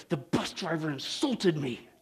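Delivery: very hushed, slow words through clenched teeth. Telling a story, voicing an upset lady on a bus, retelling words through clenched teeth. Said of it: "She said through clenched teeth".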